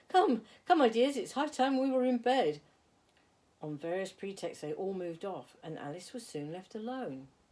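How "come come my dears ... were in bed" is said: very loud, high-pitched, trembling, quavering call. Narrator reading the canary calling out to its children, trembling voice. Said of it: "called out in a trembling voice".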